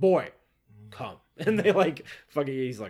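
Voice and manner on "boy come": put-on grunting game voice, much louder. Describing the game's father and son, voicing the father calling the boy: grunting Kratos voice. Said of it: "he just like grunts".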